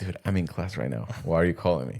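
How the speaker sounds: acted-out, put-on whispered speech. Retelling a phone call taken during class hours, acting out whispering on the phone. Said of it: "so I'm whispering on the phone".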